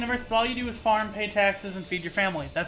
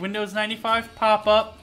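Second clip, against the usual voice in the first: ordinary talk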